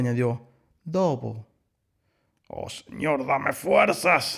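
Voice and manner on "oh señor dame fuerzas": put-on grumbling, griping old voice. Reading a story aloud, the old wolf answering the little sheep, grumbling. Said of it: "refunfuñó el viejo lobo".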